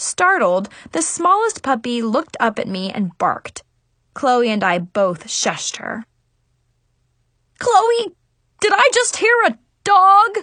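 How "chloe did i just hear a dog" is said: loud, high hollering yell. Narrator reads a girl's uncle calling out to her, yelled. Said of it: "Her uncle yelled".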